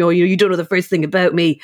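normal talking voice

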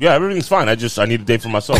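ordinary talk

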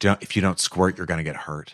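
menacing, threatening whisper. Acting out a new mother speaking to the in-laws: threatening whisper. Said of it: "she whispers in the mother's ear".

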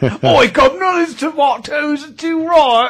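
put-on Cockney accent, pitched very high. Teasing a dad who goes cockney while picking tomatoes: cockney accent. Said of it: "you go straight Cockney".

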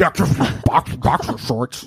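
zealous, dogmatic, put-on fervent declaring tone. Asked to confirm, speaker repeats the Jeff May impression. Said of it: "That's your Jeff May impression? Yeah".

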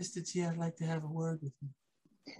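very soft, hushed voice with no bass. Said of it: "he says just like this".

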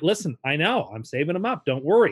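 ordinary delivery

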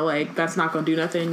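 plain

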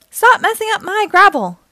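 very high, shrill, forceful, furious yell. Narrator reading a bulldozer coming up behind them, yelling. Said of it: "he yelled".

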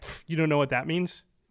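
ordinary delivery

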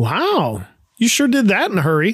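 surprised, astonished. Reading a story aloud, the skipper sees the finished crossbeams: surprised. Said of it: "and with surprise says".

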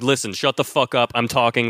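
bossy, domineering, laying-down-the-law tone. Imitating Logan silencing his children: imitating Logan bossing everyone. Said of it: "whenever Logan is like".

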